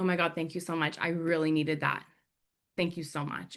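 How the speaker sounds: grateful, thankful tone. Retelling a woman's thanks after her mirror shattered: imitating grateful thanks. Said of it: "so grateful just for that little gesture".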